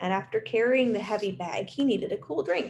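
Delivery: ordinary delivery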